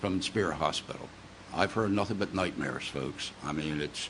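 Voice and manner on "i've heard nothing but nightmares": ordinary talk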